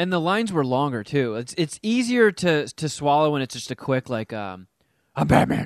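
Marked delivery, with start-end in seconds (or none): 4.3-5.7 throaty put-on hero voice, much lower. Discussing an actor's Batman lines, quoting a short one in a throaty, grumbly Batman voice. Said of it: "he really amped up that throaty, grumbly voice".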